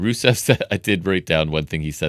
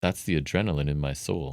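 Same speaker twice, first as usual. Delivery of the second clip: much quieter, lower-volume aside; 2 semitones lower, 8 dB quieter than usual. Retelling his reply to being told he looks good; a lower-volume remark. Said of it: "not under his breath, but like lower volume".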